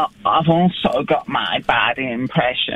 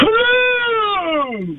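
very high, drawn-out, swooping sing-song voice. Doing a one-word impression for others to guess: bad Brian Blessed and Grampy Rabbit impression. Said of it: "it's Brian Blessed and Grampy Rabbit from Peppa Pig".

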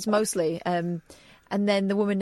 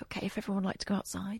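put-on funeral celebrant tone, much quieter; 10 dB quieter than usual. Retelling how a break was announced to everyone, like a funeral celebrant. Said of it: "It was in that tone of voice".

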